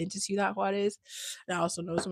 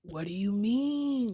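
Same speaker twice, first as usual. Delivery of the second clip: very slow, laid-back chill drawl, mean stretched; 2 semitones higher than usual. Imitating an older son who talks in a chill way: imitating a laid-back, chill drawl. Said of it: "He's just a chill".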